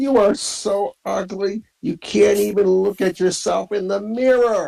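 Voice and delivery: shrill, high, shouted taunting jeer. In a game, a frustrated character yells out a taunt, yelling a taunt. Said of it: "she yells out, taunts".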